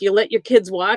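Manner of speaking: ordinary delivery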